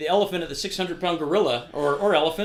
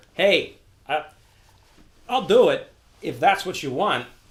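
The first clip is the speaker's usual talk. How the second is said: slow, drawn-out, put-on celebrity drawl; 4 dB louder than usual. Offering to have Christopher Walken read your letter: Christopher Walken impression. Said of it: "let's say you want to have Christopher Walken read your letter".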